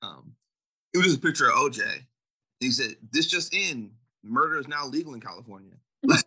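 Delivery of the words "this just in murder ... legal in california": ordinary talk, nothing marked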